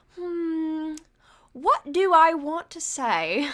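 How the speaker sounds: put-on high, very slow British accent, "hmm" drawn out. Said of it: "in a British accent".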